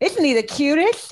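high-pitched voice with heavy lisp on every s. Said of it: "[name]'s impression of [name] has, like, a severe lisp".

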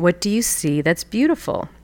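very gentle, calm, patient, tender voice. Recounting a grumpy rainy day, quoting what she asked: retelling a gentle question. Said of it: "very gently again".

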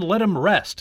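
ordinary delivery

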